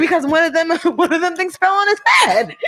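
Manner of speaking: speaking while laughing throughout.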